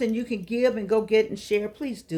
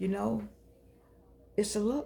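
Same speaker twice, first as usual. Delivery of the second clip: fighting tears, quieter; 8 dB quieter than usual. Talking about the look shared by people with cancer, holding back tears. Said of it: "I'm trying not to cry".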